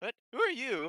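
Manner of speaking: fantasy gnome character voice. Voicing a gnome who answers a stranger: gnome character voice. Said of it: "the other gnome that, uh, responds to Rumble Dimble".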